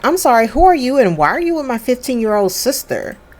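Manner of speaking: mock rude, demanding tone. Retelling a sister's demand to a stranger: imitating a rude tone. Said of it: "Rude, [name]".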